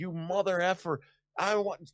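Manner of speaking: mild, held-in angry outburst. Retelling a man screaming back at the person who teased him, imitating someone screaming. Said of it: "he started screaming".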